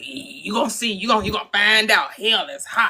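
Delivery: mock gleeful gloating tone. Imitating believers who want people to burn in hell: imitating gleeful believers. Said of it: "you sound like you a little bit too happy".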